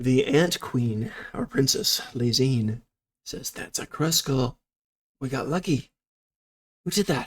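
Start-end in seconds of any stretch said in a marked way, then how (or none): 3.5-7.3 whispering, higher pitched. Voicing the princess after the creature falls asleep: whispering. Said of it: "She's whispering".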